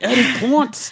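heavy New York accent, shrill and very high. Saying a managing editor's name, as asked, thick New York accent. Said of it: "Can you say it with like a thick New York accent? Like".

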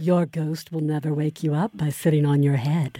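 eerie, very low, haunting, spooky ghost-story voice. Reading a line aloud, unable to resist, in a super spooky voice. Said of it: "read it in a super spooky voice".

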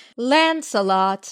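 slow, voice-assistant style voice. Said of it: "Lady on Google Voice".

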